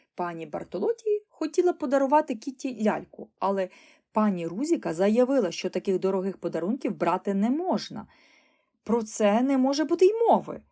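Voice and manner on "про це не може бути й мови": sharp, loud shout climbing in pitch. A mother refuses an expensive gift, shouting at her daughter reaching for the doll. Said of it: "крикнула вона дочці".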